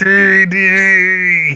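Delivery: high-pitched, long drawn-out sound. Performing the voice the other speaker asked for: Dexter yelling Dee Dee. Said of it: "Dexter yelling "Dee Dee."".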